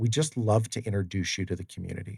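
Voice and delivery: ordinary talk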